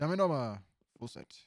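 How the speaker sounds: loud put-on Cajun accent throughout, belted out. Riffing on a movie casting idea, a friend does the Gambit accent. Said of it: "he does the Gambit accent the whole time".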